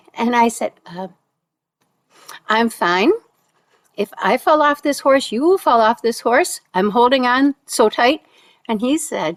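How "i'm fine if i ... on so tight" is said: usual speaking voice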